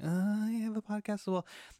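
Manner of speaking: small, timid voice. Retelling telling a kid about having a podcast: imitating own meek voice. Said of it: "as meekly and as timid as that right there".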